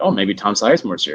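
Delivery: ordinary talk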